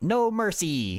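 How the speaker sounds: annoying, high-pitched frog voice. Recalling a game character's repeated voice line, in an annoying frog voice. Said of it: "in his annoying frog voice".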